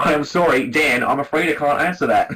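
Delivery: put-on Australian male assistant voice. Describing switching his phone assistant to the Australian man, an Australian Siri voice. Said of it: "So I changed my Siri to Australian man".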